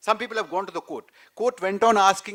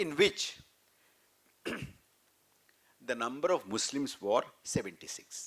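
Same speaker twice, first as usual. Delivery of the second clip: deliberate, slow, half-whispered, breathy spelling out; 7 semitones lower, 8 dB quieter than usual. Giving figures to a listener taking down the numbers, speaking slowly. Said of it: "I'll say slowly".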